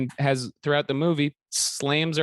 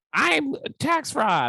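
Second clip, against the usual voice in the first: squeaky, high-pitched voice; 11 semitones higher than usual. Retelling own recorded line heard in court: own squeaky voice, imitated. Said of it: "my squeaky ass voice comes in".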